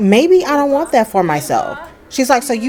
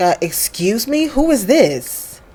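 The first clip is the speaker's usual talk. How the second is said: put-on rude tone. Retelling a character's question to a stranger: imitating a rude tone. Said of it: "Rude introduction".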